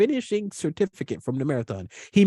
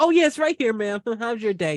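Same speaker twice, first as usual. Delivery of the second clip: put-on, very high, perky, sugary polite voice; 9 semitones higher than usual. Retelling own greeting to a courthouse clerk: imitating own perky polite voice. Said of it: "I go up there all perky".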